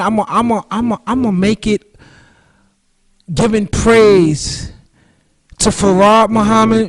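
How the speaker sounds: stuttering, repeated restarts on I'm a. Opening a talk, stumbling over words and excusing the stutter before moving on to give thanks. Stuttering. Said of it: "excuse me for stuttering".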